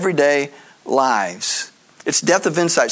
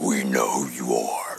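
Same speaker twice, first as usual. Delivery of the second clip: put-on very low, slow, dragging demon voice; 7 dB quieter than usual. Talking about demons facing a miracle worker, doing a demon voice. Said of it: "That's my best demon impersonation".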